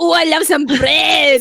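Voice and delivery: bad, slow, exaggerated, over-the-top fake French accent. Showing what a French accent makes them think of, in a bad French accent. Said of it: "when I think of French accent".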